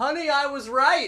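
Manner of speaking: very high-pitched, loud shout. Retelling what an older man shouted while leaving the wedding venue: imitating someone shouting. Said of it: "he shouted".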